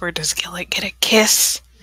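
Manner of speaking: leaning-in, close stage whisper. Playing a character who leans over to ask a question: whispering. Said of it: "lean over and whisper".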